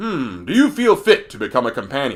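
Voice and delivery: very deep, powerful, commanding, wise sage voice. Quoting a game character's line when you walk in: deep, powerful, wise voice. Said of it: "very deep, very powerful, but very wise voice".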